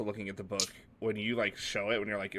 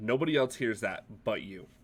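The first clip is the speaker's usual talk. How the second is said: ordinary talk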